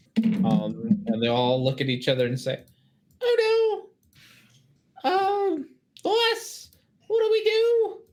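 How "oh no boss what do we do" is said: very high, drawn-out squeaky goblin creature voice. Narrating a game scene, voicing goblins asking their boss what to do: squeaky goblin voice. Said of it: "doing a squeaky voice for everybody".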